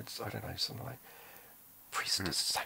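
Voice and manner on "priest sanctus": just a hushed whisper. Retelling a film scene with a ghostly voice: imitating a whispered voice. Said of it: "a whispered voice going".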